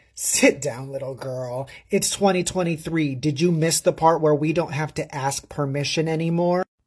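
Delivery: ordinary talk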